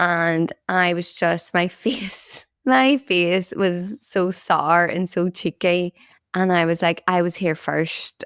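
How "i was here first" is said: ordinary talk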